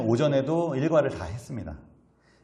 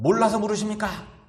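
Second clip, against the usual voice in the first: high, furious, indignant angry voice; 7 semitones higher than usual. Acting out an imagined reply asked in anger: angry, indignant tone. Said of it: "분노에 차면서".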